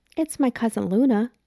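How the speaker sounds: high, quivering, trembling with terror. Reading a story aloud, a frightened boy answers: voice quivering with fear. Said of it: "His voice quivers with fear".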